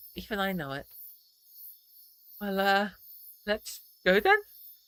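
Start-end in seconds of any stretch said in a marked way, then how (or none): 2.4-4.4 trembling, shuddering, hesitant, unsure voice. Setting off to find Orlem, the narrator finally agrees to go, in a shuddering voice. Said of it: "my voice shuddering".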